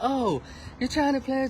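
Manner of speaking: very high, very soft, sugary and gentle voice. Quoting a woman who took a liking to the speaker, soft sweet voice. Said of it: "talk with a very soft, sweet voice".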